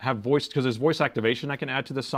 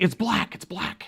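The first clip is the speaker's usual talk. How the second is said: high, excited voice; 7 semitones higher than usual. Retelling a man's answer about his laptop's color, imitating an excited man. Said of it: "And he's like so excited".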